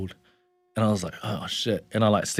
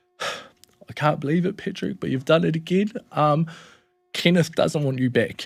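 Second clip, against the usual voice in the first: put-on weepy, heartfelt tearful voice, higher pitched; 7 semitones higher than usual. Retelling what nana said with tears in her eyes: imitating someone tearful. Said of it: "she's got tears in her eyes".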